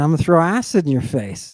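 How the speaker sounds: normal talking voice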